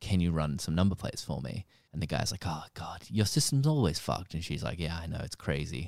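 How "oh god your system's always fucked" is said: imitated Russian voice. Retelling a call to a sheriff's department, quoting the man answering, put-on Russian accent. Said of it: "he's like that Russian accent".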